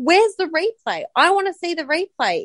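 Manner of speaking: acted-out, loud screaming shout. Retelling screaming at the TV for a replay: retelling screaming at the TV. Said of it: "sitting there screaming at the T V like".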